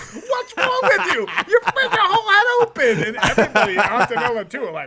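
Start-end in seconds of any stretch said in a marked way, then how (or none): 0.0-3.0 high-pitched yelling. Retelling yelling at a son who split his head open: imitating himself yelling. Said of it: "yelling at my kid, like".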